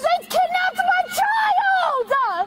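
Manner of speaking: very high, drawn-out, angry shout stretched long. Being arrested and shouting at the people nearby: yelling. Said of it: "if you keep yelling at them".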